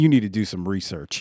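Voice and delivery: low mock voice dripping with disgust. Retelling another man's answer to someone's question, retelling a disgusted reply. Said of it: "like with disgust in his voice".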